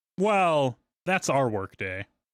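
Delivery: slow, snide, snarky and sarcastic. Retelling his reply to a request to come later: imitating a snarky reply. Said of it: "And he said it so, like, snarky".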